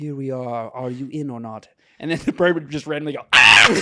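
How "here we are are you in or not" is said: low, very soft, airy ethereal voice, barely there. Describing how Michelle Yeoh was speaking, doing her airy ethereal voice. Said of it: "an airy ethereal thing".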